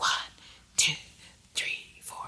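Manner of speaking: breathy whispering tone. Showing listeners how to whisper the counts while snapping fingers: whispering. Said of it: "have a whispering tone like this".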